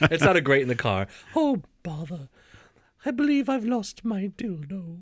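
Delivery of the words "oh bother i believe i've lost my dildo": put-on high, pitched-up little old granny cartoon bear voice. Trying out a new voice, doing Winnie the Pooh's grandma. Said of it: "you sound like Winnie the Pooh's grandma".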